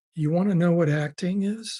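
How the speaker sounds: ordinary delivery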